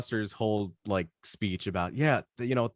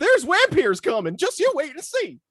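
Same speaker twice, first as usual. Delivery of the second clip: very high, loud, swooping squeal; 7 dB louder than usual. Joking about how a movie character should sound: Old Man McGucket voice. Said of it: "He's gonna sound like Mister McGuckin from Gravity Falls".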